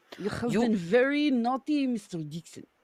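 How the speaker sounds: put-on German accent drifting toward Russian accent. Reading a comic panel aloud on request: German accent. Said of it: "Be German, go".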